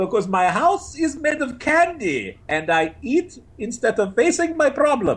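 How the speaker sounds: very high, animated, wildly swooping cartoon villain voice. Quoting a line from an animated film, doing a Gru impression. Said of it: "who I've gotten really good at doing an impression of".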